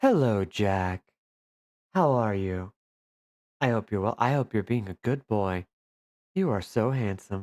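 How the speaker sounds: asmr-style voice. Speaker greets the cat Jack before playing a video game, in an ASMR voice. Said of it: "That's my A S M R voice".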